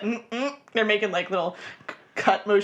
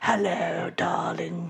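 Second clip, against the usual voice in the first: put-on lizard creature voice with bad accent; 2 semitones lower than usual. Joking about how charming they can be, doing a lizard man with bad accent. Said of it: "Lizard man with bad accent".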